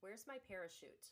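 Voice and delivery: plain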